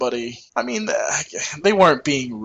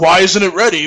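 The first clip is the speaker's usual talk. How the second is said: mock-yelling man's voice, higher; 5 semitones higher, 5 dB louder than usual. Retelling a man at the concession counter yelling at an employee, imitating him yelling. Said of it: "And he starts yelling at her".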